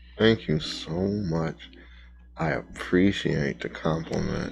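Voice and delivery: very quiet, low, rough mutter through gritted teeth. In front of strangers, a character answers Grendel through gritted teeth. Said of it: "through gritted teeth".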